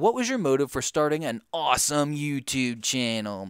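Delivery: plain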